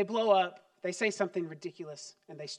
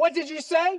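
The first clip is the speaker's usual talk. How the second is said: put-on loud, high scolding parent voice; 9 semitones higher, 7 dB louder than usual. Showing how a parent punishes a child: imitating a parent punishing a child.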